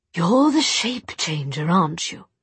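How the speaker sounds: ordinary delivery, nothing marked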